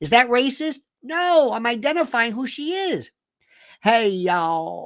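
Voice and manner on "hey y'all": put-on, mock Appalachian hillbilly woman voice. Describing a familiar type of woman, the speaker does an Appalachian hillbilly woman voice.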